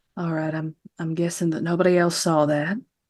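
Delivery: quiet, hushed, understated aside. Speaking in character to the gathered people after seeing something: speaking quietly. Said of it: "and just quietly say".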